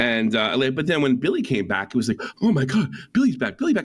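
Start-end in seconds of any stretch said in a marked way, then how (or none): 2.4-3.9 pitched-up commercial announcer voice, selling it. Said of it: "he sounded like a commercial".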